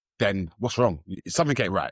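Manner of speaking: ordinary talk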